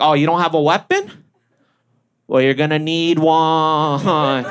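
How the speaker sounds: slow, unhurried, drawn-out voice. Retelling a break-in story, imitating dad answering the intruder. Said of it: "he's like".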